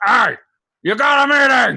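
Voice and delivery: very high-pitched, very loud, shrill angry yell. Retelling an alarm clock set to angry: imitating angry Strong Bad voice. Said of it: "if it was set to angry, Strong Bad was like".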